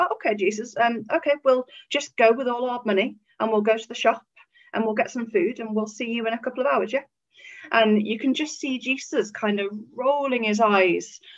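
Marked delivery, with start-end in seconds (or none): 0.0-7.0 exaggerated sarcastic tone, acted. Retelling the disciples answering Jesus about feeding the crowd: imitating sarcastic disciples. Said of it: "it's quite sarcastic".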